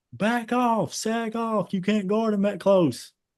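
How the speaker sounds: mock frantic freak-out, very high and drawn-out. Retelling the coach freaking out from the sideline: imitating coach freaking out. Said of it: "freaking out, like".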